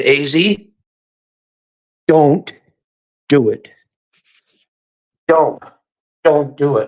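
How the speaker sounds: low, slow, dropped stern voice. Retelling a friend's warning on a call: imitating a friend's low stern voice. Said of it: "drop her voice in a stern fucking voice".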